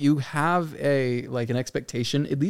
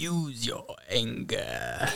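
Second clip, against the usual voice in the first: soft, hushed emperor voice that swoops; 3 semitones lower, 8 dB quieter than usual. Asked to let the others hear it after claiming to do him, in a Sidious voice. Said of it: "I can do Sidious".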